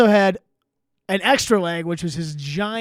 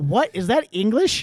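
ordinary talk

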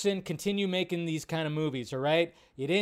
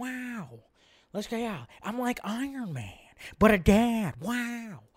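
bad put-on laid-back drawl, higher pitched; 4 semitones higher than usual. Reading a movie's tagline, then doing a terrible Owen Wilson impression. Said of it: "terrible Owen Wilson impression".

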